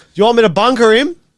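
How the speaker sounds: loud, high, full-blast top-of-lungs shout. Recounting what he yelled while others laughed in the pits, retelling a top-of-lungs shout. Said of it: "Said that as loud as fuck, top of his lungs".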